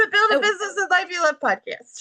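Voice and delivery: high-pitched, rapid tumbling blur of words. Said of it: "you said that really fast".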